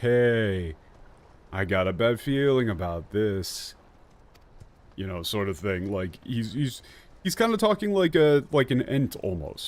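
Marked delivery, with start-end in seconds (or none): 0.0-3.7 put-on relaxed, slow, drawling speech. Showing how the turtle man sounds: imitating relaxed, slow speech. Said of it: "a relaxed".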